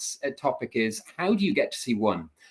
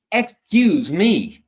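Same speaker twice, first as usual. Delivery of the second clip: loud, hostile, confrontational voice, pitched up; 7 semitones higher, 8 dB louder than usual. Recalling an American high school girl bumped into on the speaker's first day, mimicking an aggressive 'excuse me'. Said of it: "a very aggressive way of saying "excuse me,"".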